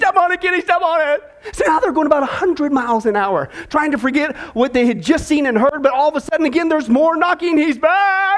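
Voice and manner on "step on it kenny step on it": mock frantic, high-pitched panicked yell. Telling a joke, a frightened man yells to the driver: yelling in panic. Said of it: "he yells to Kenny".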